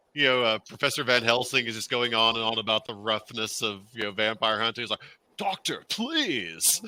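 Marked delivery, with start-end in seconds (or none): 5.4-6.8 put-on full surfer boy accent, pitched up. Quoting a line from the movie: Keanu Reeves surfer boy accent. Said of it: "he just could not shake that surfer boy accent".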